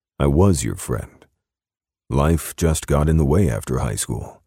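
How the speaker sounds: ordinary delivery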